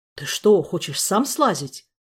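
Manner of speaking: alarmed, frightened. A man guessing where a companion's plan leads, frightened. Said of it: "Испугался Саня".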